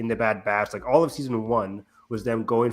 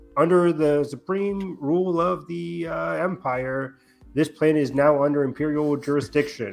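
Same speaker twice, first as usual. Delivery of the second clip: slow, halting, stuttering nervous delivery; 4 semitones higher than usual. Retelling a nervous officer's announcement to the civilians: imitating a nervous stutter. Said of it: "stuttering with his words".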